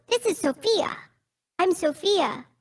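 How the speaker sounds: very high-pitched talking-doll voice, pitched right up. Showing how one of the dolls in a game talks; Sophia doll voice. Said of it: "I have the higher pitched voice".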